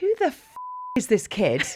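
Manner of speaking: mock composure cracking into high, aggressive angry blurt. Retelling seeing an aggressive kid, acting out losing composure. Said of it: "I can usually hold it together".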